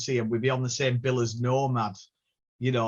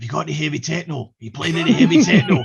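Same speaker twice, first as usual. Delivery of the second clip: very loud put-on Scottish accent; 4 semitones higher, 10 dB louder than usual. Retelling what lads at the club kept asking: imitating scottish clubgoers. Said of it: "excuse my Scottish accent".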